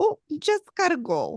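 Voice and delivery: put-on Minnesota accent. Acting out what Amy Allen would say when leaving: Minnesota accent as Amy Allen. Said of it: "she probably wouldn't do it in a Minnesota accent".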